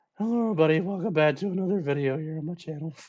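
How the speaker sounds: put-on stuffy-nosed nasal voice. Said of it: "I had a bad stuffed up nose".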